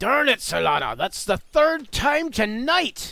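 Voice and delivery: very high, very loud, cranky irritated dwarf voice. Narrating the dwarf being beaten again by Solana at wrestling, irritated dwarf voice. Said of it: "the rather heavily tattooed dwarf".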